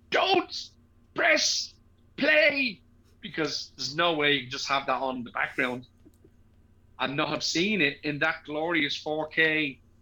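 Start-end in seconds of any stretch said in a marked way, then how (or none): 0.1-2.8 mock shrill scream, very high pitched. Retelling what the speaker screamed at someone's house, retelling a scream. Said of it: "I just screamed".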